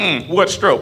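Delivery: put-on disapproving grandma voice. Imagining a haunting grandma reacting: imitating grandma judging. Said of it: "You hear grandma be like".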